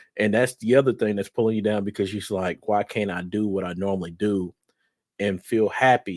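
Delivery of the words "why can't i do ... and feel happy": normal talking voice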